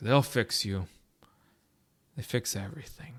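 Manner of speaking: put-on resigned tone. Recounting a movie scene, imitating Peter Weller's resigned, depressed delivery. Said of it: "he sounds like so resigned and depressed".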